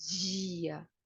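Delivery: "dia" drawn out with Carioca palatal dj sound. Explaining what marks Carioca speech, saying dia with Carioca palatalized d. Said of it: "quando é falado assim, que isso caracteriza o falar carioca".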